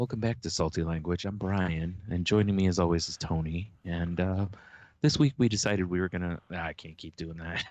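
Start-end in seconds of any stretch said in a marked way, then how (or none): 0.0-6.4 unhurried, smooth, slow podcast and public-radio voice. Podcast host opening the episode, welcoming listeners in an NPR radio voice. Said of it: "like an N P R".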